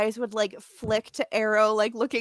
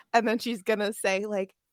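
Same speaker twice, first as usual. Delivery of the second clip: ordinary talk, nothing marked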